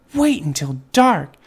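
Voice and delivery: eager, excited calling. A young bat speaking to her bird friends among the bats, excited. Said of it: "Stella Luna said excitedly".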